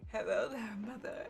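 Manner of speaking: put-on sexy female voice, low, deep and sultry. Asked to do it right now, the speaker performs: deep, sexy lady voice. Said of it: "my deep, sexy lady voice".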